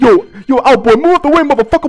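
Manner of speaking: put-on yelling, shouted. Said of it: "and he's like".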